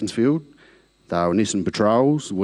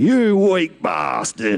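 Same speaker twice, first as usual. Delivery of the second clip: mock laughing bellow, very high, swooping, roaring; 9 semitones higher, 4 dB louder than usual. Retelling how a man behind him kept roaring at him, retelling a roaring yell. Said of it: "all I could hear him roaring out".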